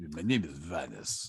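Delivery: slow, heavily laid-on, put-on Russian accent. Trying out a voice for the character Vanis: Vanis in Russian accent. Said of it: "like a Russian badass".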